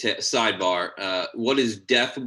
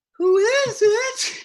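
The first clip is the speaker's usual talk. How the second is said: very high, poorly faked, put-on woman's voice; 4 dB louder than usual. Voicing a lady character in a scene: poor imitation of a woman's voice. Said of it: "with a very poor voice of a lady".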